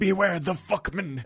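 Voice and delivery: put-on old-timer's film-style old man voice. Quoting a line from a movie: imitating an old man's movie line. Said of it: "just the way he says, like".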